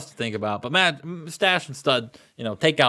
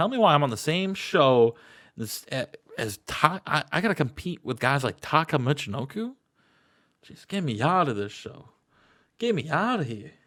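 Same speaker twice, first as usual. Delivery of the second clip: disdainful, dismissive scoffing; 3 semitones higher than usual. Acting out a wrestler backstage scoffing at a rival on TV: imitating The Rock scoffing. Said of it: "he scoffs at Taka celebrating".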